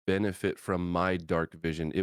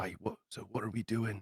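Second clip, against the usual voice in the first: soft, hushed half-whisper; 3 semitones higher, 8 dB quieter than usual. Speaking in character, asking the others what they are doing: half-whispering in character. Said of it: "Zed'll kinda, like, whisper".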